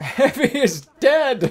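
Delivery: piercing, very high, loud scream. Playing a team game as teammates fall: screaming. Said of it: "I just screamed that".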